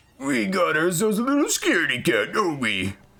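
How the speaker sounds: very high character voice with swooping pitch. Trying out a character voice while playing: Pete voice. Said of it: "trying to get my fucking Pete voice".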